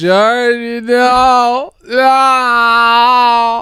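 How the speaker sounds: crying out, "no" stretched. Retelling a movie scene where the shark eats Georgie: impression of Tommy crying out. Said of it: "That's a really good impression".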